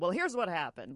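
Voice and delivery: ordinary talk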